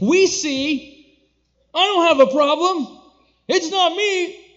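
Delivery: self-righteous, smug, high-pitched and loud.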